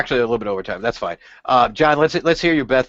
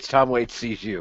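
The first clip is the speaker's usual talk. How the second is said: ordinary delivery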